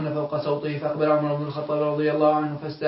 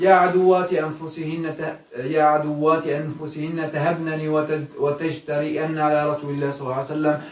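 ordinary talk

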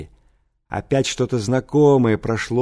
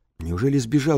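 ordinary delivery, nothing marked

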